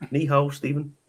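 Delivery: Chinese spoken with a Ballymena accent. Saying a Chinese greeting to a guest: Chinese in a Ballymena accent. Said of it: "say some Chinese with a Ballymena accent".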